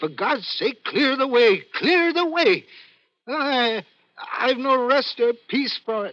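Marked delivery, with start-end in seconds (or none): 0.0-2.6 rising, called-out, ghostly spectre cry. Retelling what the ghostly figure shouts at the line: imitating a spectre's shout. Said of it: "and it shouts".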